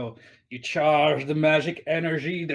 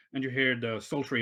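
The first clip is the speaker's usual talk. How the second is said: ordinary delivery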